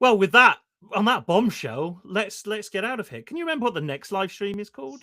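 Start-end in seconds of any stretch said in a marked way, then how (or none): 3.2-5.0 accent from Norfolk. Wrapping up, ask the other speaker a question in your best attempt at a Norfolk accent. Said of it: "He says in his best Norfolk accent".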